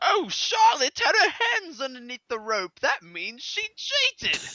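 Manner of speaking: very high-pitched, badly done British accent. Retelling what Paige said on the show: Paige impression with British accent. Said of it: "Is that your best British accent?".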